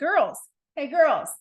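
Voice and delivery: mock bus driver voice, loud, high shouting. Retelling how a city bus driver turned around to the girls: imitating the bus driver yelling. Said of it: "he started yelling".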